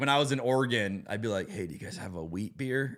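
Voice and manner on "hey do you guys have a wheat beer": put-on whisper, lower and quieter. Retelling asking for a wheat beer in Oregon: imitating own whispered question. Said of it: "I'd like to whisper it".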